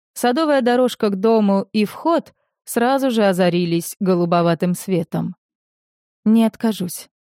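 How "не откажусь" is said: timid, shy, bashful manner. Tanilla answers the narrator's offer, timid. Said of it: "робко сказала Танилла".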